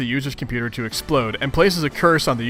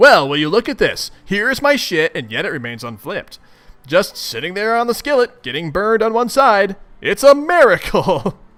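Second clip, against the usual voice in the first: thick, mocking sarcasm, high and swooping; 6 semitones higher, 4 dB louder than usual. Redoing a character's line after deciding he is more sarcastic: more sarcastic. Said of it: "he's being a little more sarcastic than that".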